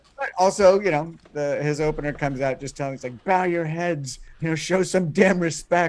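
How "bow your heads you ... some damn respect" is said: put-on heavily British accent, scolding lecturing tone. Retelling how a comedian opened his show: very british accent. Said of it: "in a very British accent".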